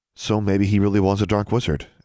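ordinary delivery

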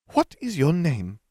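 insistent, demanding tone pitched very high. Narrator voicing a character interrogating a boy: demanding. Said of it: "Umbridge demanded".

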